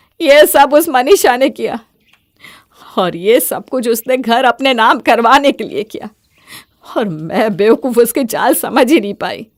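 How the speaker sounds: tearful, sobbing speech, weeping while speaking. A mother confesses to her son and daughter-in-law, crying and tearful. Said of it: "तुम रो मत।".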